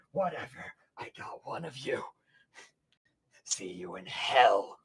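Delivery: breathy, whispered growl of last fury. Narrating a foe's final lashing-out attack, growling furiously at Boing Boing. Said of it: "as he growls at Boing Boing".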